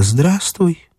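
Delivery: softly spoken. Dasha greets Ivan Ilyich before taking his arm, said quietly. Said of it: "Даша сказала тихо".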